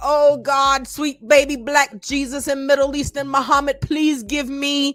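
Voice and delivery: high, put-on tearful voice, fake crying. Speaker acts out himself at the computer praying, mock crying. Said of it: "That's why I'm on the computer crying".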